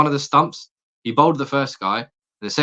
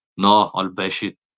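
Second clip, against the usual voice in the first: bad, horrible, put-on South African accent; 4 semitones lower than usual. Describing a cricketer from South London, in a horrible South African accent. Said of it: "in a, a horrible South African accent".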